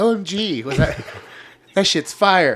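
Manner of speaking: sassy friend voice, laid on, drawn-out gush. Asking how someone reacted and acting out their answer: imitating Joe's sassy voice. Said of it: "give me your Joe voice".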